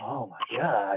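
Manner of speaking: freaking out, frantic burst of speech. Imitating Kramer bursting through the door: imitating Kramer freaking out. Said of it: "bust through the door. He'll be like".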